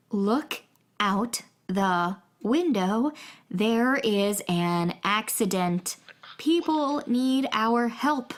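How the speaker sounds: very slow, deliberate, each word spelled out. In a scene, a character tells Roger to look out the window, speaking very slowly. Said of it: "I'm going to say this as slowly as I can".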